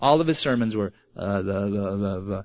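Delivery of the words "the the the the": low, soft monotone mutter. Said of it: "he spoke in a monotone voice".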